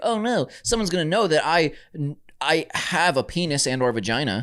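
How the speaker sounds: ordinary talk, nothing marked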